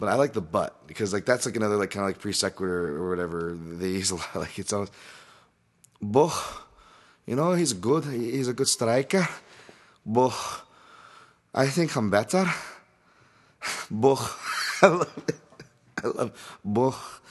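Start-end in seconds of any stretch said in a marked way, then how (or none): 6.0-17.2 poorly done Liverpool accent, very slow and drawn out. Talking about a striker's name, the speaker tries a bad English accent. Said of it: "That's why I poorly try to do them".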